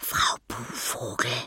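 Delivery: whispering. Narrator reads Anton speaking to the little vampire, whispered. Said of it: "flüsterte Anton dem kleinen Vampir zu".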